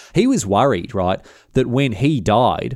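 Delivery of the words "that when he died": normal talking voice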